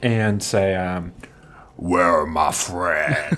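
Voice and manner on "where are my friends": very low, deep werewolf beast voice. A player's character pins a man to the ground and demands, in werewolf voice. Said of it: "that's his werewolf voice".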